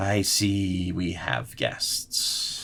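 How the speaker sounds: slow speech with every word drawn out. Voicing a Lich who notices the party arriving: voicing the Lich. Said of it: "the Lich hears you, looks over his shoulder and goes".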